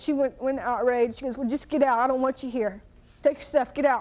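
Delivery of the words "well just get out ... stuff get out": usual speaking voice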